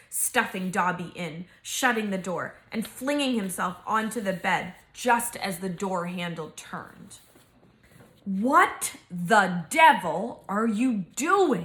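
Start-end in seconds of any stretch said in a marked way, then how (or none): 8.2-11.6 very slow words spoken through tightly clenched teeth. Reading a story aloud, voicing the uncle's line to the hero: through gritted teeth. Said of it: "Said Uncle Vernon through gritted teeth".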